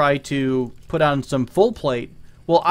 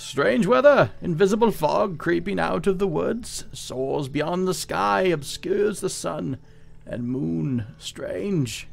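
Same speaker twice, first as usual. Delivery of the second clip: put-on jittery, shuffling old man voice; 2 semitones higher, 5 dB quieter than usual. Narrating a stranger shuffling up, then voicing him: old man voice. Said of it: "That's my best old man voice".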